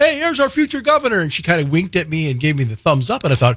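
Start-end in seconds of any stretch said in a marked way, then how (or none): 0.0-1.2 put-on playful, very high, teasing yell. Recalling calling out to a woman at a parade, retelling a teasing yell. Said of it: "I was teasing her, yelling at her".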